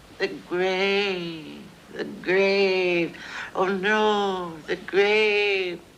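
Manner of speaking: very high, very slow, croaky, froggy trembling voice. Speaker imitates a woman who sits up every night saying this: little froggy, quivering voice. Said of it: "say in this little froggy, quivering voice".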